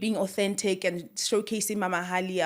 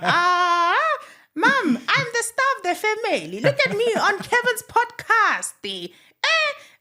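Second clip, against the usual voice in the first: shrill, high, bouncy, swooping cartoon caricature voice; 14 semitones higher, 7 dB louder than usual. A speaker shows the voice he found for a cartoon caricature face. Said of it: "now I can do the voice like this".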